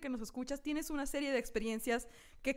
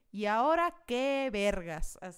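acted utterly bored, loud, very slow, drawn out; 2 semitones lower, 5 dB louder than usual. Retelling own past thoughts while staring out a window: imitating being bored. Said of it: "Así de tan aburrida que estaba".

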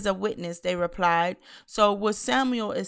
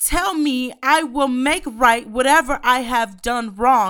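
loud, high-pitched preacher-style shout; 5 semitones higher, 7 dB louder than usual. Reading scripture aloud to the listeners, yelling. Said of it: "I don't mean to yell at y'all".

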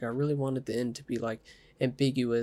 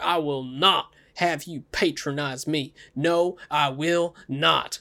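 very slow, loud, drawn-out screaming outburst; 3 semitones higher, 5 dB louder than usual. Recapping a movie's end scene, acting out a man screaming: imitating someone screaming. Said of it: "he's just like screaming".

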